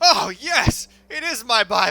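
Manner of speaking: loud, high, excited and delighted cry.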